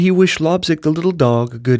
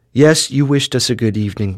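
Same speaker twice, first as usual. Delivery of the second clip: ordinary delivery, nothing marked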